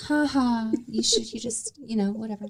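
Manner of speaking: amused, high voice, laughing through the words. Retelling how Brittany laughed while she was crying: imitating Brittany laughing.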